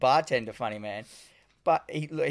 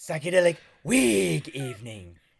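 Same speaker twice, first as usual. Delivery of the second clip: swooping cartoon-character voice, swinging pitch; 2 semitones higher than usual. Retelling a character's line about the night's theme: Ren from Ren and Stimpy voice. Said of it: "You sound like Ren from Ren and Stimpy".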